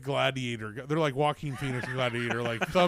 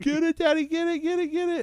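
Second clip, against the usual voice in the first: put-on very high, urgent, frantic children's screaming cries; 13 semitones higher than usual. Retelling how the family reacts to a spider: imitating kids screaming. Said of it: "everybody's screaming for me to kill it".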